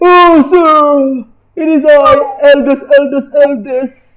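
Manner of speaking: very slow put-on old person voice. Voicing the third guy called as the elders: changed voice for the elder. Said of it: "so I changed my voice".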